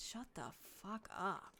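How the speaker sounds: very quiet, faint, hushed voice from far off. Narrating a scene, voicing someone who answers the yell: faint voice from across. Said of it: "you hear this like faint voice across said".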